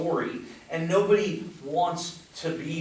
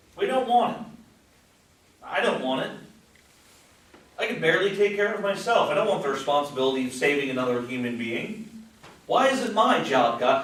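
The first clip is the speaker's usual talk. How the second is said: put-on sarcastic, complaining tone; 3 dB louder than usual. Preaching about responsibility for others, complaining aloud to God: put-on sarcastic tone. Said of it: "I'm speaking sarcastically".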